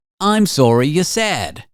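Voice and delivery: bad, fake, vaguely British, Australian-sounding accent. Voicing a future AI assistant, use a bad vaguely British accent. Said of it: "vaguely British, Australian. I'm bad at accents".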